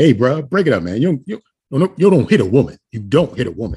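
plain, natural, unsoftened male voice. Imagining people breaking up a fight: imitating a natural male voice breaking up a fight. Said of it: "does their natural voice then come up?".

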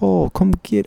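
failed put-on British accent. Retelling a partner's requested line, imitating a British accent. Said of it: "ask me in a British accent".

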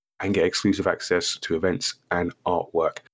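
ordinary delivery

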